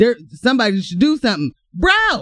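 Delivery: heated, worked-up rant, high and swooping. Speaker vents about the government to an audience; yelling. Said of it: "Sorry for yelling in y'all ear".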